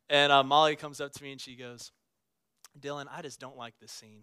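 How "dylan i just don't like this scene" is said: put-on light, soft country accent, gently laid on. Retelling what Molly said to you during a movie scene; Molly's little country accent. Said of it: "She had this little country accent".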